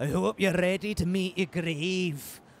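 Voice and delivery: bad, terrible put-on Scottish accent. Taunting enemies in a game: terrible Scottish accent. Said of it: "And my terrible Scottish accent".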